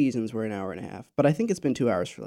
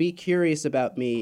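normal talking voice

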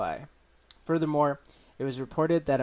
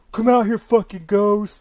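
very loud, high, challenging bro yell; 7 semitones higher, 11 dB louder than usual. Mocking a ghost show host who yells: imitating Zach Bagans yelling. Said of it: "that douchebag guy that fucking yells".

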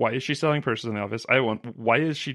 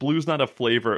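ordinary talk

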